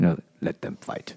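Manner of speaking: hushed, breathy, soft delivery. Quoting a movie line while describing characters: Ken Watanabe impression. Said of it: "they pull out total Ken Watanabe".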